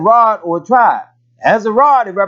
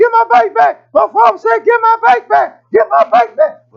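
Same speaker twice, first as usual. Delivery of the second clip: put-on very high-pitched young kid voice; 14 semitones higher, 3 dB louder than usual. Retelling a bike being taken, the owner chasing after it, in Travis's high-pitched voice. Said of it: "high-pitched voice".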